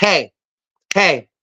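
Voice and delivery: acted-out sharp snapping, like at a dog. Retelling getting a woman's attention off her phone, imitating snapping at someone. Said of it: "I'm snapping at her like she's a dog".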